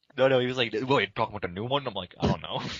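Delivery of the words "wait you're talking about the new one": put-on fast, tough-guy Australian accent. Retelling what Kirby asked about the commercial, tough Australian accent as Kirby. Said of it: "how your Australian accent for Kirby is like some, like, tough case".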